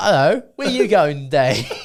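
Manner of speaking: put-on British taxi-driver accent. Doing the cab driver character again when asked: Jake Lockley British cabbie accent. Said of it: "What a handy accent".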